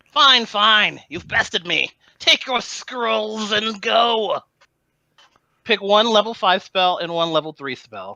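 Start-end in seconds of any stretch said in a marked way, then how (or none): 0.2-4.4 high, angry, hissing monster voice. A game master voices a bested creature giving up the scrolls: angry hissing creature. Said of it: "The creature hisses angrily".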